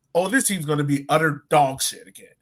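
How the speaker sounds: usual speaking voice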